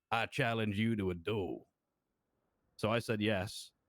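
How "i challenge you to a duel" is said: mock Southern accent, drawling. Retelling a stranger's challenge, imitating a fake Southern accent. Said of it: "trying to talk like he's from the South".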